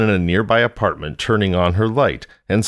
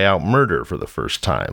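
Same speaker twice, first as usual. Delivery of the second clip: plain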